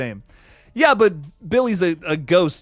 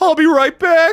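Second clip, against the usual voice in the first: very high, loud, drawn-out delivery; 13 semitones higher, 8 dB louder than usual. Recalling the Scream scene: Matthew Lillard impression. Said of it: "The scene in Scream where he's like".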